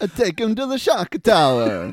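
loud, very high-pitched put-on Italian accent. Recapping a movie scene and redoing a line in an italian accent. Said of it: "That should be in an Italian accent".

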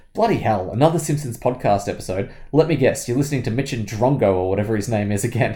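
usual speaking voice

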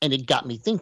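voice jumps, cracking into a weird register. Discussing Spider-Man films: voice jumping to a weird octave. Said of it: "My voice went to a weird octave there".

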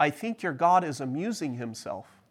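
ordinary talk, nothing marked

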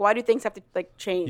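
usual speaking voice

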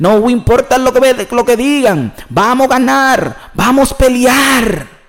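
Mexican-accented Spanish, very slow and high. Repeating a message in Spanish for someone, in a Mexican accent. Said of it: "I'm talking like the Mexican accent".

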